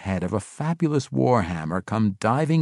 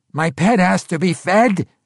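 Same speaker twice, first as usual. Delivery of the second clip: high, loud, begging goblin voice; 8 semitones higher, 6 dB louder than usual. Narrating a story, voicing a little goblin before the orc boss: goblin pleading. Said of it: "the goblin pleaded".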